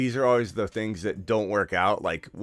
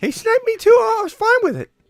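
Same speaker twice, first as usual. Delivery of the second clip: cartoon mouse voice, much higher, louder; 10 dB louder than usual. A player recounts getting sniped during a game, in a Mickey Mouse voice. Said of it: "Stop with your Mickey Mouse voice".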